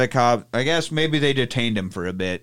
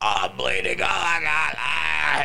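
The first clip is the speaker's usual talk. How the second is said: very slow, drawn-out, hammed-up fake cries of pain; 2 semitones higher, 4 dB quieter than usual. Retelling men running out faking injuries: imitating fake cries of being attacked. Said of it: "acting like they've been attacked".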